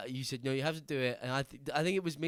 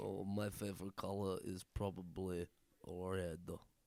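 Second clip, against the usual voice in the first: put-on Russian accent, lower, quieter; 7 semitones lower, 9 dB quieter than usual. Answering an interview question as Boyek, in a Russian accent. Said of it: "Was that a good Russian accent?".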